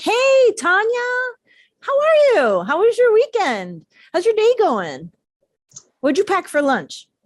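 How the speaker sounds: eager, glad, excited voice, high and swooping. Speaker demonstrating how to greet a person named tanya, excited greeting. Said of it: "oh, you're excited to see me".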